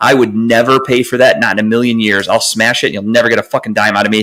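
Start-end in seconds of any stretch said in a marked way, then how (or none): none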